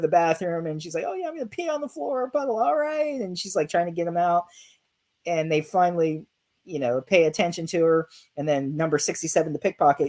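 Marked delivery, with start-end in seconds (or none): 1.1-3.2 very high, screaming voice. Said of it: "screaming how she has to go".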